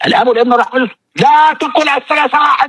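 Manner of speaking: acted confrontational debate style. Showing how a debater attacks a belief: imitating a combative debate style. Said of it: "لكن بقى شوف أسلوب المناظرة".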